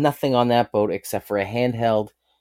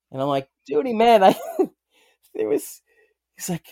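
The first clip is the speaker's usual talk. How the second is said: plain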